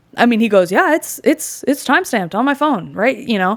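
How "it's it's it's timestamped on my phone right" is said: casual, throwaway, offhand, slightly pitched-up tone. Retelling what a man said as he pulled out a list, imitating quick speech. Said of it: "he just says it real quick".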